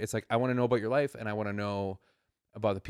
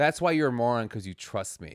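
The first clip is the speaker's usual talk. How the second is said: ordinary talk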